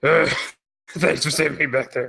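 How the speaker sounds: rough, gravelly, gravel-edged tone. Redoing the rescued character's thanks in a more gravelly voice. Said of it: "so the more gravelly voice".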